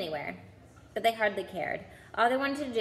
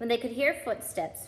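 plain

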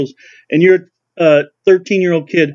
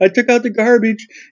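mock high, frightened, spurted-out blurt; 5 semitones higher than usual. Describing a husband whose wife says they need to talk, retelling a frightened blurt. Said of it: "he just starts spurting out".

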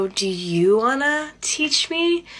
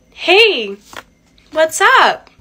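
deliberately altered, pitched-up, raised voice; 6 semitones higher, 8 dB louder than usual. Greeting friends as they join in, in a higher-pitched voice. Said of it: "Making your voice higher?".

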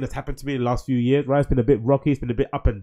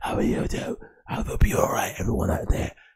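breathy, close-mic podcast-style whisper; 7 semitones lower, 6 dB quieter than usual. Mocking podcast ASMR, whispering into a microphone: imitating a podcast whisper. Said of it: "whispering into a microphone".

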